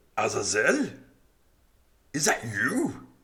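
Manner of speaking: rough calling voice. Narrating the scene to the players, voicing someone calling out: rough voice calling out. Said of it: "you hear this really rough voice call out".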